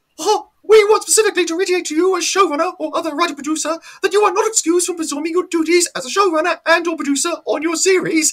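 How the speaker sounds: very high, rapid squeaky voice. Reading an excerpt from a letter to showrunners aloud, in a Mickey Mouse voice. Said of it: "I'm going to do it in the voice of Mickey Mouse".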